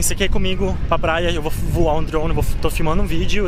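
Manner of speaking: plain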